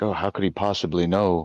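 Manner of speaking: put-on muttered aside. Retelling a scene where Emma speaks up: imitating Emma muttering under breath. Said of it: "even under her breath, is like".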